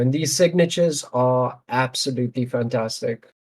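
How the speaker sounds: normal talking voice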